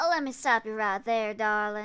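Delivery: put-on Southern belle accent. Recalling a character she voiced, the speaker performs her line in a Southern belle voice. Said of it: "gave her like a Southern Belle or something voice".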